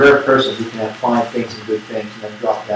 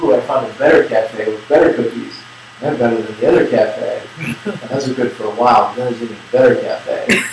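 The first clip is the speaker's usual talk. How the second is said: plain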